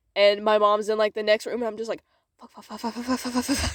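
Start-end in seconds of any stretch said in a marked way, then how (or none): 2.4-3.8 muttered under breath, much quieter. Sneaking to the toilet at night with mom next room, muttered swearing under breath. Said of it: "swearing under my breath".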